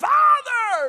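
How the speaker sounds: loud, high-pitched shouting. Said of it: "he shouts".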